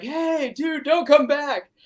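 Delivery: high, drawn-out screaming yell. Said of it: "screaming at Toby to be like".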